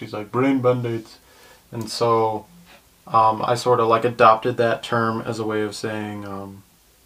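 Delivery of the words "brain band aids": funny put-on Indian accent. Explaining a family phrase, imitating the sister's funny indian accent. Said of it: "she always does this weird, funny Indian accent".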